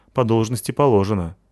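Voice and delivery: plain reading voice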